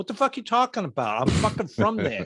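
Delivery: put-on heavy New England Boston accent. Retell Bill's answer to voice coaches teaching him the accent, imitating Bill's full-on Boston accent. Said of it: "he was full on accent".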